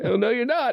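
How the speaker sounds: mock indignant, high-pitched and outraged.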